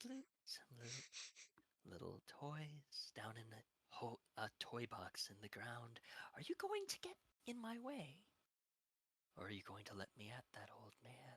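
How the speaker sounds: death-whistle voice with wild pitch swoops. Voicing a figure who demands to get at the old man: voice like an Aztec death whistle. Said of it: "if an Aztec death whistle had a voice".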